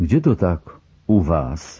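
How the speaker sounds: measured, slow, unhurried delivery. A senior lieutenant, in no hurry to go to the lockup, asks: asked quietly. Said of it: "zapytał cicho".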